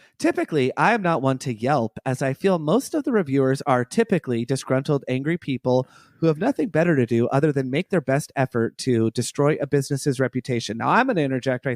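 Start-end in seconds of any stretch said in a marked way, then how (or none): none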